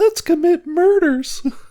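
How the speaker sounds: squeaky, very high little penguin voice. Describing an imagined penguin character, its line spoken in a high penguin voice. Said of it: "really like high voice".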